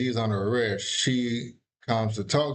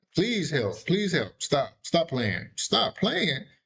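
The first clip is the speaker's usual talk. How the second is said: put-on desperate pleading, higher; 5 semitones higher than usual. Retelling what she said after the police arrested him: imitating someone begging and pleading. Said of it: "she started begging and pleading".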